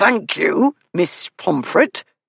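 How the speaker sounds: speaking through clenched, gritted teeth. Reading a speaker who thanks a questioner who mocked him: through clenched teeth. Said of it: "he said through clenched teeth".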